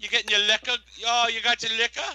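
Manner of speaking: high, loud mocking voice of a nosy woman.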